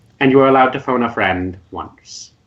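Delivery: ordinary delivery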